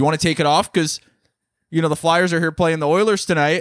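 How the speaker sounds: acted, increasingly mad, annoyed, insistent delivery. Retelling how a man got mad at them, imitating an angry man. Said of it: "He was like getting mad at me".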